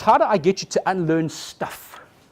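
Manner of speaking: loud, slow, emphatic delivery. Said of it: "So my challenge in twenty minutes is".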